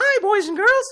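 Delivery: very high, little cartoon mouse voice. Host on the air, greeting the audience: Mickey Mouse voice. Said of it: "I sound like Mickey Mouse?".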